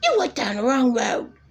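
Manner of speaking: mock vicious screaming, berating rant. Retelling what an elderly woman screamed at a man driving: imitating a woman screaming. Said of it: "He's screaming at him".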